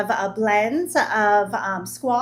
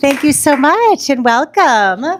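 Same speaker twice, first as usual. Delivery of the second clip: loud, projecting teacher voice. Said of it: "I could use my teacher voice".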